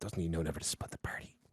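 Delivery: whispered mumble under the breath, barely voiced. Playing a character grumbling about a companion leaving: mumbling under his breath. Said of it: "mumbles under his breath".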